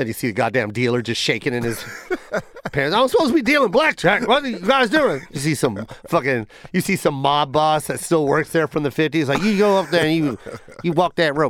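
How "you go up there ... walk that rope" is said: put-on rural country accent. Acting out what a casino mob boss tells you, in a country voice. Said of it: "I don't know why I'm using a country voice".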